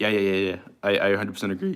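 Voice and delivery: cracking voice. Speaker agreeing about a comic artist, voice cracking. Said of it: "My voice is cracking".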